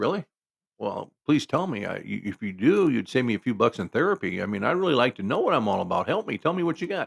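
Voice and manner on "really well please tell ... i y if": usual speaking voice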